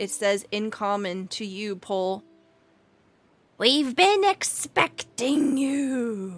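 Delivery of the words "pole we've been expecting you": grating throaty croak, higher, slower. A game master voices a goat speaking to the players, in a grating, throaty croak. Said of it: "in this grating, throaty croak of a voice".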